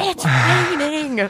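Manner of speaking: screamed, high-pitched shout. Retelling marching in pouring rain: imitating own past screaming.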